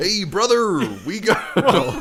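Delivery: very high, very loud wrestler-style promo bellow. Speaker's put-on voice drifts while pleading to be let in, Hulk Hogan impression. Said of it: "Now he's sounding like Hulk Hogan".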